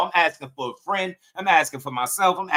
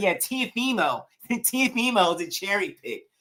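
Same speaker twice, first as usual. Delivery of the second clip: slow, nasal voice, like nose is pinched; 3 semitones higher, 4 dB quieter than usual. Imitating a viewer arguing about Teofimo, talking like holding his nose. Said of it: "He talked like he holding his nose".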